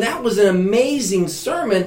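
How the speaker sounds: ordinary delivery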